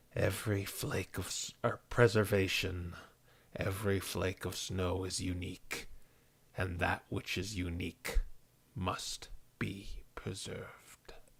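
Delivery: pale, quiet, barely whispered voice. Reading out the voice heard in your head when touching it, pale quiet almost whisper. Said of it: "This very pale, just quiet, almost whispering voice".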